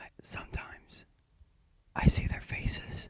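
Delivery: quavering, trembling whispered voice. Reading a character's frightened line aloud: trembling whisper. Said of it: "he said in a trembling voice".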